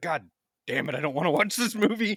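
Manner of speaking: play-acted fed-up griping. Speaker retells calling a friend about Good Burger, imitating Matt being mad. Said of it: "He was so mad about having to watch it".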